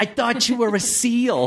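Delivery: high, apologetic, sorry voice of a little shark.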